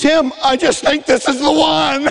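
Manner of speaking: put-on tearful voice. Retelling what mom said on meeting his girlfriend: imitating mom crying. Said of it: "my mom starts crying, and she goes".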